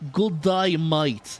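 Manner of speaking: laid-on, put-on Russian Australian accent. Trying out the deep Russian Australian accent a listener described. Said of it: "a deep Russian Australian accent".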